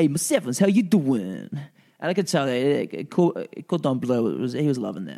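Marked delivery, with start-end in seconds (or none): 0.0-1.5 put-on warm Italian-American accent. Recalling a fellow actor playing a cop, the speaker retells his line in Italian-American accent. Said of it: "he had like an Italian-American accent".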